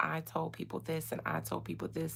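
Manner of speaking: ordinary delivery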